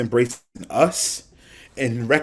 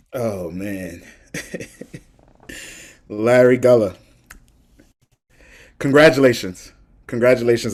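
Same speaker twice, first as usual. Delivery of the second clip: voice just holding back tears. Congratulating the guest before starting an interview, holding back tears. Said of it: "I was trying not to cry".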